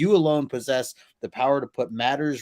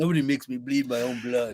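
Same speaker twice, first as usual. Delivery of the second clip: acted brash, cocky voice.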